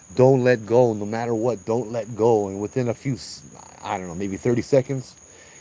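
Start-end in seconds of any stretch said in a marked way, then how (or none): none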